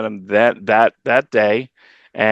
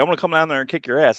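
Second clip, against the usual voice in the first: mock-furious voice, higher and faster; 5 semitones higher than usual. Retelling a caller's threat while alone at the store; imitating Bobby, really mad. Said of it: "This guy sounded really mad".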